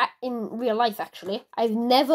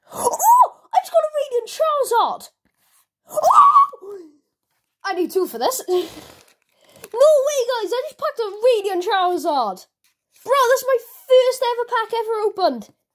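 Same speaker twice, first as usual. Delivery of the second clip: ecstatic, very high, loud excited shrieking; 11 semitones higher, 5 dB louder than usual. Opening a first-ever card pack on camera and pulling a rare card, excited screaming. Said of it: "I'm sorry if I just ruptured your eardrums".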